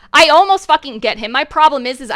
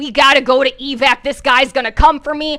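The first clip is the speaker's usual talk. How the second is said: put-on panicked voice. Retelling a game escape to evac: retelling own panicked words. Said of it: "I'm panicking".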